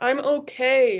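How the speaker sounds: objecting tone. The narrator answers others arguing over her in a windy tent, protesting. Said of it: "I protested".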